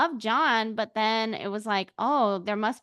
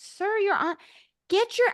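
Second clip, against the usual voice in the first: imitated screaming, higher pitch; 10 semitones higher than usual. Retelling yelling at a contestant on Survivor: retelling own screaming. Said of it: "I was screaming at the".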